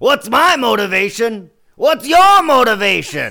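bad, very loud, high, slow swooping bellow. Trying a quick Al Pacino voice, asking about motivation. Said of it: "give us your Pacino asking".

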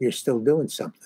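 soft, hushed, half-whispered voice. Retelling what a director said while brushing past, imitating a half-whisper. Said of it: "he says in a whisper".

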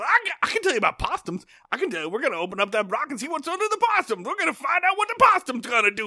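mock very high, eager, swooping, excited holler. Retelling a classroom scene where a character interrupts: imitating Ernest T. Bass yelling excitedly. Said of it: "gets really excited, and he yells".

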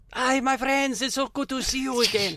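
high-pitched put-on French accent. A player voicing a character in an improvised scene, in a French accent. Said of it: "I did go French again".

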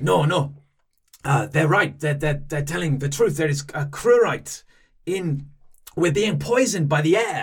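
put-on over-the-top French accent. Voicing a barbarian-like vampire character in the game, with an outrageous French accent. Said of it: "had an outrageous French accent".

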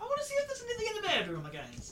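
shrill, very high, very loud whiny voice. Telling the group to look in the bedroom: whiny voice. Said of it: "That sounds a bit whiny".

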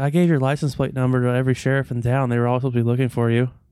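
put-on casual, nonchalant delivery. Retelling what she said to him: imitating someone saying it casually. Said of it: "she said this to me like, like it was okay".

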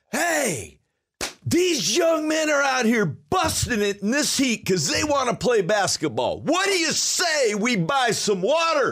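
put-on very high, booming street-hawker bellow. Speaker recreates calling out to crowds to buy water for young players: retelling his bellowing. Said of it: "i'm out there bellowing".

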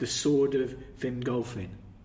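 normal talking voice

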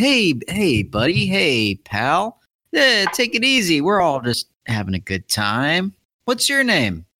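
chummy, buddy-buddy, sing-song, drawn out. Voicing a character who pats down a man and distracts him: distracting, chummy voice. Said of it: "so he comes around and to, in, you know, further distract him".

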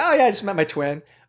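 play-acted casual, offhand, no-big-deal delivery. Showing how they usually say it, retelling saying it nonchalantly. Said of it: "I say it really nonchalantly too".

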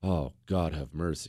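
very low, hushed muttering under the breath. Retelling reading a horrifying tale, hand over mouth: imitating muttering under breath. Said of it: "you're almost saying under your breath".

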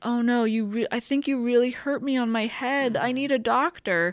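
fake wounded, pleading tone. Retelling a locked-in man's second tactic on her: acting out feigned hurt. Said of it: "Trying to like appeal to her more nurturing sensibilities".

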